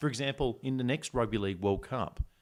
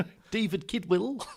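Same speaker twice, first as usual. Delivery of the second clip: put-on New Zealand accent, much higher; 10 semitones higher, 4 dB louder than usual. Co-host showing how a phrase would sound, New Zealand accent. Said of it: "So you got to get the accent right".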